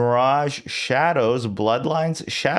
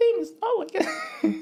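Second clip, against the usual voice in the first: put-on high-pitched computer woman voice, higher; 4 dB quieter than usual. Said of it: "Computer is a, a woman voice, so that's why I had to go so high".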